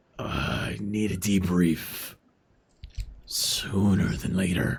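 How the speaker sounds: voice grinding through words. A character still in cement form speaks over comms in a grinding voice. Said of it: "as you hear the grinding voice".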